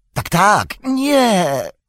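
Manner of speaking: very high, piercing shriek, nie drawn out. Pressed by Frodo about going there again, Gollum answers, Gollum shrieking. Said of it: "wrzasnął Gollum".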